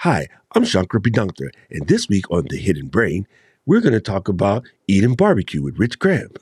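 bad radio-host voice with swooping pitch. Imitating a podcast host's ad read for another show: bad Shankar Vedantam impression. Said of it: "that was a really bad, uh, version of him".

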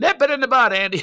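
very high, loud, pushed-out character voice. Retelling a press conference, doing the old Barney Fife line. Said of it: "I do the old Barney".

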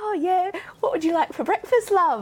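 put-on British accent with very high voice. Speaker retelling how they talked over there: british accent. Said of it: "talking to me in a British accent and then I can't help it".

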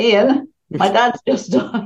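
slow speech, laughing through the words. Recalling telling a coach that a parent had just died, laughing while talking. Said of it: "I'm laughing about it now".

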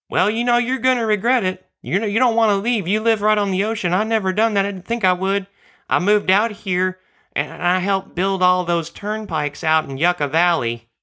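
high put-on deaf-man voice. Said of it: "he said".

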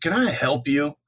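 put-on, heavy, dripping sarcasm. Retelling confronting people on a porch: retelling a sarcastic question. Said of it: "with as much sarcasm as I could muster".

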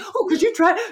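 high, loud, eager and excited gushing voice. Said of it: "I'm like".

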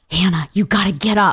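serious, alarmed, urgent tone. Retelling being woken in the night by Drew, imitating Drew's alarmed tone. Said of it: "I knew that tone".

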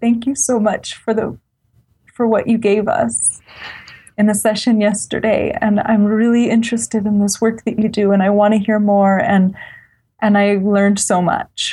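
choked-up voice catching with tears. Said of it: "I'm kind of tearing up saying it".

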